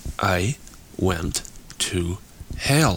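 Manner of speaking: very slow, soft, each word set apart. Narrator reads Dole speaking to Len, words spaced apart. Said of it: "Dole spaced his words".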